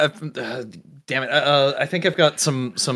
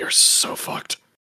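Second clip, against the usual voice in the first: muttering under breath. Game narrator voicing a character hefting a body into a freezer; muttering under his breath. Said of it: "he mutters under his breath".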